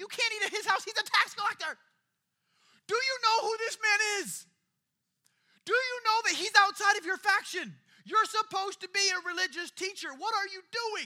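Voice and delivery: shrill, very loud, high panicked outburst. Retelling the religious leaders' objection to the visit: imitating people freaking out. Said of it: "all the religious leaders are freaking out".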